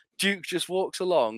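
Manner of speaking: plain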